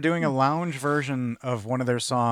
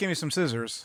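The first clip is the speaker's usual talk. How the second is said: usual speaking voice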